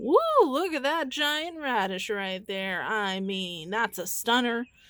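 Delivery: mock-gushing, dripping with sarcasm. Showing a poor radish harvest: extremely sarcastic fake praise. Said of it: "I'm being extremely sarcastic".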